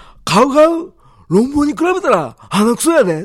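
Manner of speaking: very high, loud, showy put-on celebrity voice. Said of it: "よくね、真似してたんでね".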